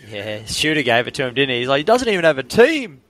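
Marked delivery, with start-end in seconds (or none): 1.7-2.8 terrible put-on New Zealand accent, very high pitch. Retell on a show what someone said about another man, in a bad Kiwi accent. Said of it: "that is the worst Kiwi accent I've ever heard".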